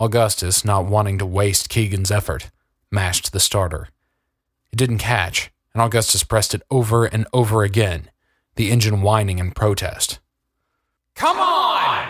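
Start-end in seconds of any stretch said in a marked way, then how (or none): 11.1-12.1 shrill, very high-pitched yell. A man keeps pressing a plane's starter that won't catch, shouting. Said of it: "shouted Augustus".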